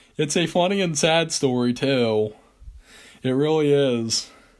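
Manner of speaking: speaking through laughter. Asking a listener whether to tell a story, laughing while talking. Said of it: "I'm sorry for laughing".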